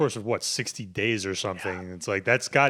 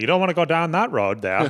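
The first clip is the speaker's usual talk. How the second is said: imitated Nova Scotian accent, higher and louder; 7 semitones higher, 5 dB louder than usual. Imitating how people up north talk: put-on Nova Scotian accent. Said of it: "Nova Scotian almost".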